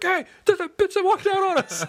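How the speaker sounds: mock accusing voice.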